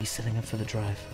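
very quiet, very deep, hushed ASMR murmur. Commentating on a player setting up for the drive, ASMR-style voice. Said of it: "you gotta speak ASMR style".

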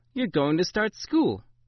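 grandmotherly, pitched high. Granny speaks to the narrator: said with a smile. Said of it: "Granny said with a smile".

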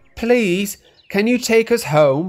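very high-pitched, begging, pleading delivery. Passengers appealing to Toby and his driver, pleading. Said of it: "pleaded the passengers".

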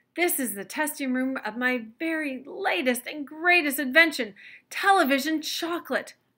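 bursting with giddy excitement, high, loud. Mr. Wonka presents his testing room to the children, excited. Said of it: "hopping up and down with excitement".

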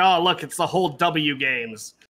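ordinary delivery

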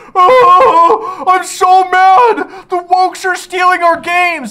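mock very high, very loud, slow indignant outrage. Mocking angry commenters in every comment section: mocking angry commenters. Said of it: "roll out into every comment section everywhere going".

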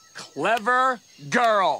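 sarcastic, mocking tone meaning the opposite. Mocking another dancer in a sketch after an insult: sarcastic. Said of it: "that sarcastic "clever girl" with the slow clap".

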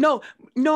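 high, loud laughter through the words. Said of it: "I'm laughing".

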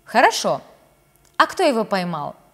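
ordinary delivery, nothing marked

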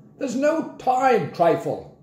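very high, slow, politely irritated tone. Narrating Grandpa, trying to stay polite to the old lady behind the door, increasingly irritated. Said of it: "clear he was becoming increasingly irritated".

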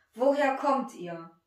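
severe, strict tone. A man questions the men who once sold him as a slave, stern voice. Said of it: "fragte er sie mit strenger Stimme".

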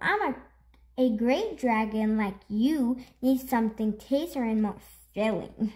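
ordinary delivery, nothing marked

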